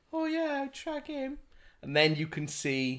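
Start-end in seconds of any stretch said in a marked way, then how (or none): 0.1-1.3 very high put-on girly voice. Acting out a dating-app user's thoughts about a match, put-on girl voice. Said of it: "I like my girl voice there".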